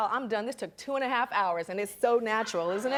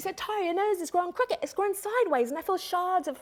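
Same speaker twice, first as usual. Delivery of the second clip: put-on British accent, pitched up; 8 semitones higher than usual. Quoting a British makeup artist from the speaker's childhood, in a British accent. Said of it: "(with British accent)".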